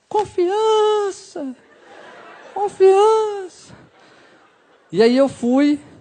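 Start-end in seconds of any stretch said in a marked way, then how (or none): 0.2-3.8 very high, echoing, movie-style voice from beyond. Retelling a voice from beyond before his first kiss, echoing voice from beyond. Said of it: "com a voz com eco e tudo".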